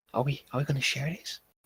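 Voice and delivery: hushed whisper. Voicing Cameron in a game, turning to another player, whispering. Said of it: "and she whispers like".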